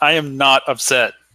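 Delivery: half shout. Voicing Lazira insisting to Eris in a scene: shouting in character. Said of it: "kind of shouts".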